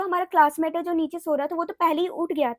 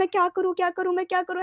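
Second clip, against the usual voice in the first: put-on panicked crying voice; 2 semitones higher than usual. Retelling how she shivered and cried when frightened, imitating her own crying panic. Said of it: "मैं बहुत ही ज़्यादा रो रही थी".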